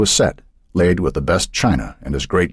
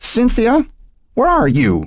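very high cry, swooping call. The mother's call erupts from the guest room for her daughter, sudden outburst. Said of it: "voice erupted from the guest room".

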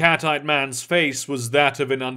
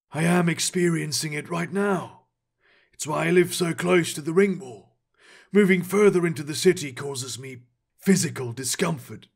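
dark rasp with a refined, scholarly polish; 4 dB quieter than usual. A narrator voices the cat-eyed man answering the vizier, dark, raspy voice. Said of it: "Only a man with silvery skin and cat eyes met his gaze. ... the cat-eyed man's voice was dark and raspy. ... His accent was refined, like a scholar's might be".

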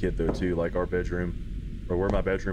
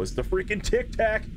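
high-pitched burst of excited shouting. Streamer reacting to an in-game note, excited yell. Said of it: "I didn't mean to yell".

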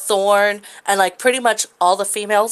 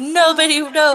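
mock jealous outburst, put-on, pitched higher; 7 semitones higher than usual. Acting out a jealous line for an imagined story: imitating Zell getting jealous. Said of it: "He pops in and he's like".

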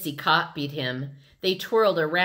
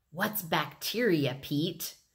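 plain reading voice

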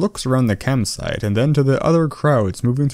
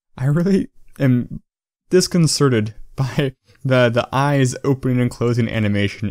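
usual speaking voice

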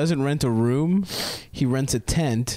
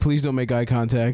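normal talking voice

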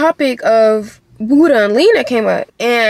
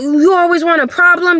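acted-out high, heated, wild going-off rant; 6 semitones higher than usual. Quoting a guy who got mad at the speaker, imitating someone yelling. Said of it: "going off, yelling, like, talking crazy".

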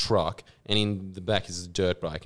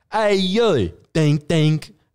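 very high, loud, drawn-out voice; 9 semitones higher, 10 dB louder than usual. Retelling how videos always start, imitating Rocco Siffredi. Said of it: "his videos would always start with this".

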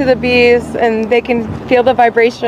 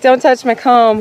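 usual speaking voice

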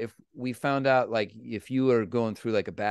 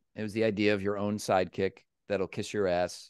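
ordinary talk, nothing marked

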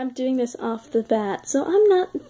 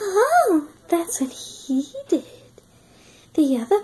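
put-on high, whiny ghost-girl voice

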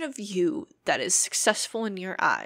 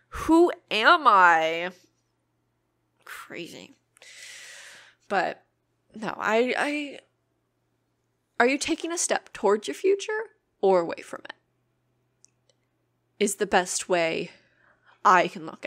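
getting emotional, choked voice; 3 dB louder than usual. Podcaster shares personal advice on their show, getting emotional. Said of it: "I'm getting emotional".

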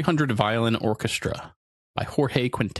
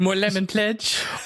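very high, sitcom-cartoon maid accent; 9 semitones higher than usual. Called out by the other speaker, repeating the line in a Family Guy maid accent. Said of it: "you also did like a Family Guy maid accent".

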